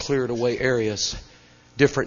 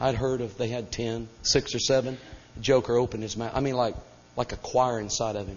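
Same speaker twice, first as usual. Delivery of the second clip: ordinary talk, nothing marked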